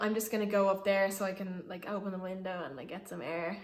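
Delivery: ordinary talk, nothing marked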